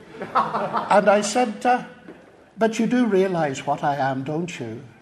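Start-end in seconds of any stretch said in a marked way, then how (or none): 2.6-4.8 put-on conspiratorial, secretive whisper, lower in pitch. Retelling own words to a woman, retelling a conspiratorial whisper. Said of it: "I lowered my voice to a conspiratorial whisper".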